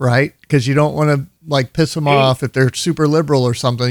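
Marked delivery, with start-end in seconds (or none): none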